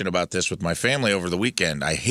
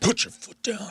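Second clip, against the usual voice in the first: imitated furious, livid man's voice, higher; 13 semitones higher than usual. Retelling a stranger's demand at a movie: imitating a livid man. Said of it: "This guy was livid".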